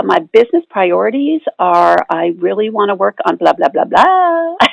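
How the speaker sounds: every phrase ending on an upward uptick. Imitating how her voice sounded when she started: upward inflection at phrase ends. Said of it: "this is how her voice sounded. ... So there was this all this upward inflection going on".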